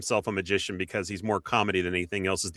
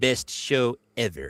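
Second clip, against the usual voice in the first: put-on cartoon shop-clerk voice; 3 semitones higher than usual. Repeating a compliment from a listener in a Comic Book Guy voice. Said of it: "can we say that in the comic book guy voice?".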